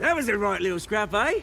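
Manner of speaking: put-on relaxed British-accented speech.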